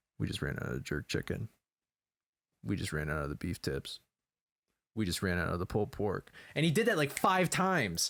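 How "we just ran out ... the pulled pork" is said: quiet, confidential, whispered voice. Retelling what a busboy said into the waitress's ear: imitating a whisper. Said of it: "leaned behind her in the ear to whisper".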